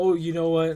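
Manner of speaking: mocking, mimicking put-on voice. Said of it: "you said it in a way how I didn't say it".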